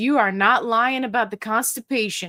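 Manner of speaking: normal talking voice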